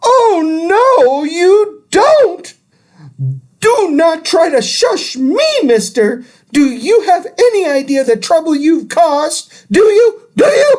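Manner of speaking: very high, shrill, screechy yell, an octave up. Reading the mother scolding her son for shushing her: screechy voice an octave higher. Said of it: "My mother's voice went up an entire octave".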